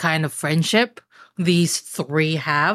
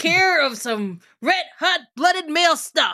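put-on higher-pitched, reassuring grandpa voice. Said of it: "Grandpa's gonna be like".

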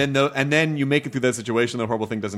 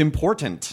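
important, every syllable carefully enunciated; 4 semitones higher than usual. Agreeing about listening, clearly enunciating important. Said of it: "You just really enunciated that word".

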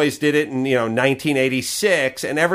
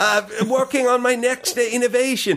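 high-pitched, fake put-on British accent. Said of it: "speaks with a fake accent".

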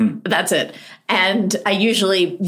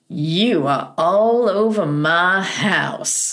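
put-on American Southern accent throughout. An author retells John Grisham's words on first meeting, in a Southern accent. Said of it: "He goes in a Southern accent".

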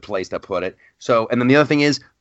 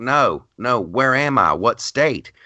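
very slow, thick Southern drawl, drawn way out. Retelling a woman at a gas station counter, in a thick Southern accent. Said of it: "She's using a really thick Southern accent".

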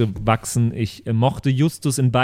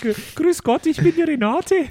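put-on female character voice. Asked why they sound like a Renate when speaking as a woman, the speaker does Renate's voice. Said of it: "wie so eine Renate".

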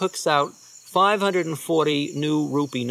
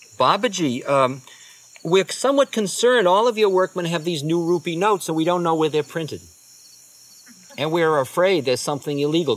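plain

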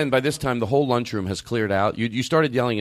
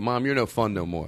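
plain

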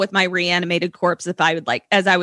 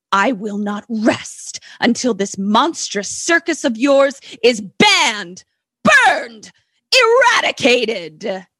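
overacted, hammy, dramatic delivery, higher; 4 semitones higher, 4 dB louder than usual. Retelling a reporter's speech to the circus man: hammy scenery-chewing delivery. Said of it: "all the scenery is gone 'cause he chewed it all up".

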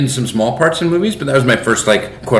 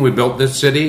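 plain

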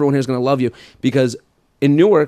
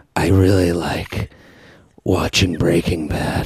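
mock sultry seductive voice, lower pitch; 8 semitones lower than usual. Imitating women in voice memos trying to get the listener going: imitating a seductive voice. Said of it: "Are they trying to get me, like, going?".

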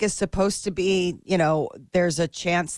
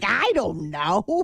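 put-on New York accent; 3 semitones higher than usual. Imitating a downstairs neighbor answering questions: new york accent. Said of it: "with the New York accent".

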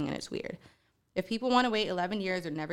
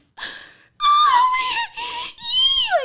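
hyperventilating wheezing sob, very high and very loud; 12 dB louder than usual. Retelling how a woman reacted to a proposal, imitating hyperventilating, wheezing crying. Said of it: "like fucking hyperventilating".

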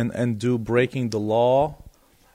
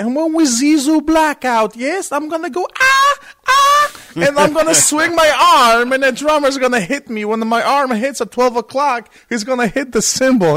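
put-on loud, pitched-up German accent on every word; 9 dB louder than usual. Retelling a man explaining his choreography to the band, imitating Rudolf's German accent. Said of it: "then this German accent is like".

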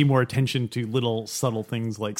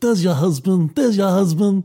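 put-on old mafia boss voice, higher pitch; 6 semitones higher, 5 dB louder than usual. Showing the game of doing every line like Marlon Brando: Marlon Brando impression. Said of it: "do every line like Marlon Brando".

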